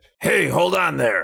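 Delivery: put-on horror villain voice. Reading a book aloud with others, voicing the monster Freddy: Freddy Krueger voice. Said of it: "couldn't stop thinking of Freddy Krueger".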